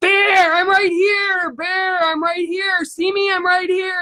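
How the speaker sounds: play-acted high, loud, overjoyed calling out. Retelling what a spirit named Robert says in the speaker's face: imitating Robert being loud and happy. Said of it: "He's really loud".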